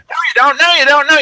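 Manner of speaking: acted very high, shrill, in-your-face yelling, escalating. Retelling a man who got in his face: imitating someone yelling. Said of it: "and he's yelling".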